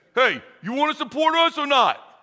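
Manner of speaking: put-on pushy East Coast accent. Describing police support phone calls, imitating the caller's East Coast accent. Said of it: "some guy with like an East Coast accent".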